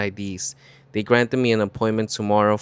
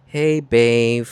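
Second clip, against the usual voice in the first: raised, put-on puppy-dog voice; 5 dB louder than usual. Retelling how he greeted the speaker on the phone, imitating his puppy voice. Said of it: "in his puppy voice".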